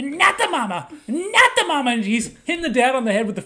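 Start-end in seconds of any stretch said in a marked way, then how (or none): 0.0-1.9 put-on baby character voice, higher and louder. Retelling a scene from the show Dinosaurs: imitating the Dinosaurs baby. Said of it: "This fat little baby's on his head".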